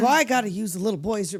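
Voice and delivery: lightly played mock voice of a loud guy. Retelling a movie scene, quoting the partying man: imitating a loud guy. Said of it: "and he's loud".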